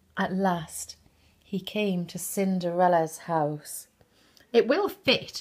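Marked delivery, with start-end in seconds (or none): 4.6-5.5 shrill, high, loud screeching cry. The stepsisters snatch the shoe as the prince arrives at the house, screeched. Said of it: "screeched her stepsisters".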